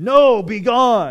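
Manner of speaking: very loud gruff shout. Retelling a stage scene, Ralph finally turns Joseph and Mary away: Ralph's gruff voice. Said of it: "Ralph with a real gruff voice".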